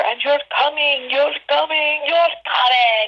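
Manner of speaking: acted, very high-pitched yell. Retelling a director yelling at an actor during a scene: imitating someone yelling. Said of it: "he's yelling at her".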